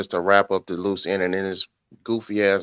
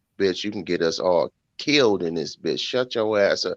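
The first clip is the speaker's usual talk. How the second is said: usual speaking voice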